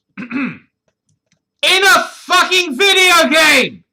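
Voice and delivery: very high, shrill, very loud scream. Speaker ranting to the others in a group conversation, screaming. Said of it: "I didn't want to scream".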